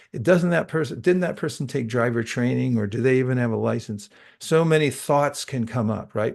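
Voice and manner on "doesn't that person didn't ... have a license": usual speaking voice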